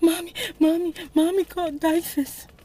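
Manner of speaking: put-on hard sobbing. Retelling a sister's words while she cried hard: imitating someone crying hard. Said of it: "She couldn't even talk".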